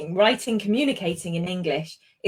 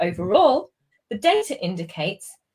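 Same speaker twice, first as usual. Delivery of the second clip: brief pause following the word overall. Reading an introductory phrase aloud: short pause after overall. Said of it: "you'll notice I pause after it before I tackle the rest of the sentence".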